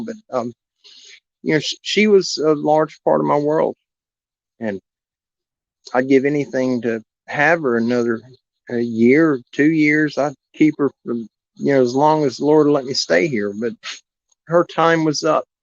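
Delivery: voice getting choked up while speaking. Thanking someone and talking about losing her dog Piglet, choked up. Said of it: "it's kind of choking me up a little bit right now".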